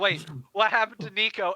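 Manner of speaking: ordinary talk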